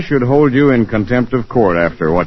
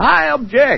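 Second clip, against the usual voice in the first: acted-out, very high-pitched, shrill, loud outburst. Telling another person how Corliss yelled out during questioning in court: retelling Corliss's loud yell. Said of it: "she yelled right out in a loud voice".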